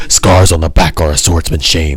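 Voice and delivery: super deep, heavy voice, as low as possible. Critiquing voice acting, speaker mimics how Zoro's voice actor sounds: super deep Zoro impression. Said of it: "a super uh, deep voice like this".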